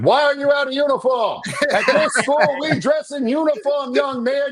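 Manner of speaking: high-pitched, shrill scolding shout through a megaphone. Acting out a first rant, yelling at a child: pretend yelling at a student. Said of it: "a megaphone yelling behind a child".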